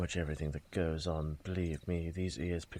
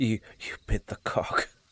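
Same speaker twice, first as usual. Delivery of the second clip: loud words squeezed past a held-back, stifled laugh; 4 semitones higher, 6 dB louder than usual. Voicing Donovan, hand over his mouth: suppressing a laugh. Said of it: "trying to suppress a laugh".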